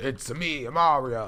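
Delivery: put-on horrid New York accent. Doing a bit about how the character sounds to him: Mario in a horrid New York accent. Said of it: "a horrid New York accent".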